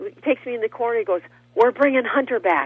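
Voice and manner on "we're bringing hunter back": play-acted, loud, all-excited announcing tone. Recounting what a man told them after pulling them into a corner: retelling his excitement. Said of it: "he's all excited".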